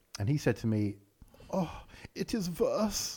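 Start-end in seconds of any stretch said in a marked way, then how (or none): 1.5-3.1 exaggerated comedy German accent, slow and pitched up. Quoting someone's reply in a comedy german accent. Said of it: "You can't resist it, can you, with comedy German accent?".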